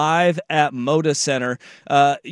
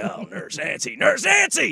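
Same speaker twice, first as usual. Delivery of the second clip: play-acted wound-up stand-up comic screaming; 8 semitones higher than usual. Retelling a stand-up joke about Pee Wee Herman: imitating Sam Kinison screaming. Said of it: "he just starts screaming and yelling".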